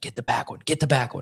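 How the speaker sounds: imitated whisper. Retelling a hunting partner's instructions while hunting: imitating a whisper. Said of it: "And we're whispering".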